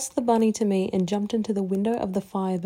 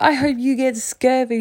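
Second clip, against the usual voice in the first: bright, happy, cheerful raised shout; 4 semitones higher, 6 dB louder than usual. Reading her reply from the dock to the narrator on the boat: cheerful shout. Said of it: "she shouted cheerfully".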